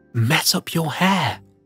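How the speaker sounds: stage whisper, still voiced. A girl at the kitchen table speaks to her little sister: half-whispered. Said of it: "she whispered to her little sister".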